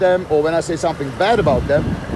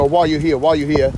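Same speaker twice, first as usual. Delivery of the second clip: plain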